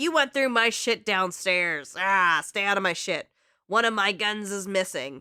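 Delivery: mock-furious, put-on furious yelling rant. Recapping a game scene, voicing the stepdad who bursts into the room, mock-furious rant. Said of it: "completely furious that Chloe is blasting".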